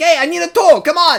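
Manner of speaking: energetic, vivacious, very high-pitched and very loud. Comparing how a man speaks in a new version versus the original, imitating his vivacious energy. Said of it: "He's so more vivacious".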